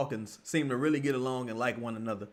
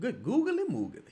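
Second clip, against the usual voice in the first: put-on talking like an old man; 10 semitones higher than usual. Reacting to a woman on screen, the speaker talks like an old man. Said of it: "I saw talking like an old man".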